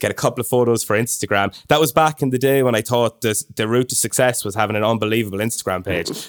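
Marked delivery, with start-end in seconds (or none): none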